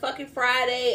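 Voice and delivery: ordinary talk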